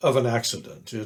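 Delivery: plain reading voice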